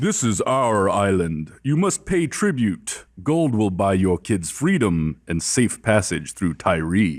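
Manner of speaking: deep, disembodied, declaiming voice. A voice from nowhere addresses the listeners, Decker's deep booming voice. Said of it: "magically deep booming voice".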